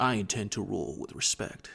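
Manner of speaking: soft, gravelly put-on impression voice.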